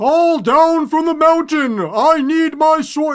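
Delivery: very high, loud, thundering, booming voice. Talking with a co-speaker, imitating one particular Skeksis: booming Skeksis voice. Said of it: "one guy with the booming".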